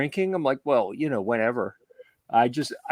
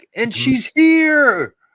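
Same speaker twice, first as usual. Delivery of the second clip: very high, very loud joyful celebratory cry, drawn out; 13 semitones higher, 9 dB louder than usual. Imitating how the other speaker read a chat message: celebratory reading. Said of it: "you read that in a celebratory tone".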